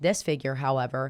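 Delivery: plain reading voice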